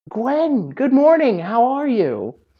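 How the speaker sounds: put-on high-pitched old woman voice. Voicing grandma Mary greeting Gwen at breakfast: Mary voice. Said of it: "slipping into the Mary voice".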